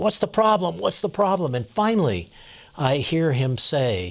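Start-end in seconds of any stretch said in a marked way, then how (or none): 0.0-1.5 put-on baffled shouting, fast, high, repeated. Retelling shouting at a man who ran into the house, retelling own shouting. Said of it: "I keep shouting at him".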